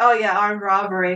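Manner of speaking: normal talking voice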